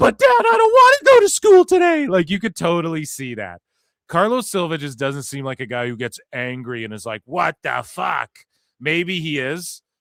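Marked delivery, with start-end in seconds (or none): 0.0-2.1 put-on bratty teenage tantrum voice, very high and loud. Speaker acts out a man freaking out like a teenager, mock teenage tantrum. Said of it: "throwing like a teenager tantrum".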